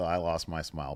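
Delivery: plain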